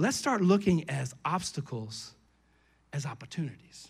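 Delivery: very slow, very low, deliberate, drawn-out words. Speaking to a church, announcing they will say this line slow. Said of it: "I'm going to say this slow".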